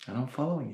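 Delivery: soft, quiet inner-thought voice.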